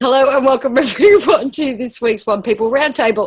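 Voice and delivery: words spoken through giggles and laughter. A host opens this week's roundtable episode: laughing while talking. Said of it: "I'm laughing".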